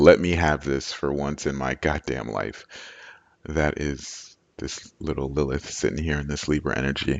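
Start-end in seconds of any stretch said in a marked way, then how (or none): none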